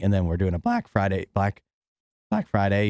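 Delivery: voice cracking. Running through the week's show schedule, the speaker is voice cracking. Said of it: "You hear my voice crack there?".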